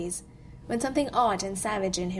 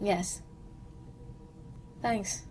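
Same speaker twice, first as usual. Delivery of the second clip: much quieter, soft, deliberately casual and offhand; 8 dB quieter than usual. He thanks Rhodey, reaching for Rhodey's hand; soft, trying to sound casual. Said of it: "softly and trying to be casual".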